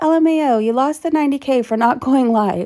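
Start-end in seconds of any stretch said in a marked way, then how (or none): none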